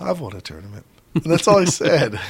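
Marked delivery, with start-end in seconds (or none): 0.0-0.8 quiet delivery, lower pitch and quieter. Retelling what a player said about winning a tournament, quietly. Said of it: "So he just quietly goes".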